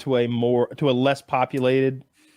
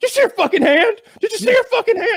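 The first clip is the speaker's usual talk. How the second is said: high, loud, blurted shock, scared disbelief and panic. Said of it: "we both looked at each other like".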